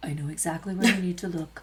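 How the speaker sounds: gentle, hushed, soft and low voice. Speaker retells a man suddenly speaking right beside them, imitating a man's soft voice. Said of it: "And that was kind of his voice".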